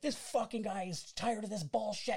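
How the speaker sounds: mock aggressive, high-pitched screaming, shouted outburst. Retelling how a stranger screamed at another man: imitating someone screaming. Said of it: "starts screaming at this dude".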